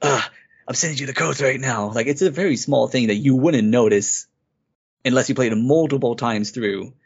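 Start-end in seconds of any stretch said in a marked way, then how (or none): 0.0-1.9 mock weary, tired, pained hurting voice. Retelling how a game character sounds near death: imitating Isaac's pained, tired delivery. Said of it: "deliver his lines, like, in a pained way. He's tired".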